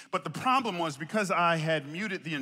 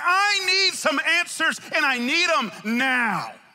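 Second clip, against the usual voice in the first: mock urgent, insistent, hard-pressing tone; 11 semitones higher, 8 dB louder than usual. Voicing David grabbing God by the collar, acting out an urgent demand. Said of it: "grabbing God by the collar and saying".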